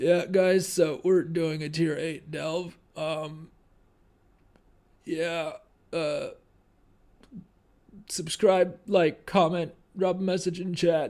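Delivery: fake slurred, out-of-it talk. Joking to chat about sounding out of it while unwell: mock slurred, out-of-it talk. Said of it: "slurring and just going".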